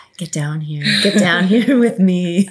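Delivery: sultry low register. Co-host opening the show, putting on a low sultry voice. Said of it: "trying to get low and sultry".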